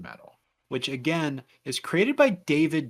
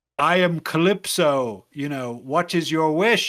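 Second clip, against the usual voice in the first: louder, booming put-on villain voice; 5 dB louder than usual. Retelling a game character's line, booming Calypso voice. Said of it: "booming acted performance".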